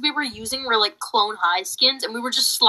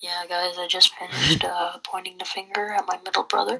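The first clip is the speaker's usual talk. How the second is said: mock depressed tone, much lower; 5 semitones lower than usual. Speaker imitating the other person's last remark, mocking a depressed voice. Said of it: "you sound so depressed. You're like".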